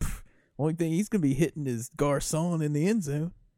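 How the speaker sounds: put-on dismissive "pff", defensive scoffing tone. Retelling own reaction to talk of the quarterback getting hit: imitating own defensive retort. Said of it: "I got all defensive".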